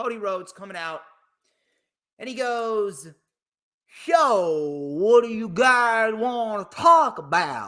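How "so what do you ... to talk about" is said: very slow Southern drawl, "So" stretched out. Retelling what Cody Rhodes said to the crowd: Cody Rhodes impression with Southern accent.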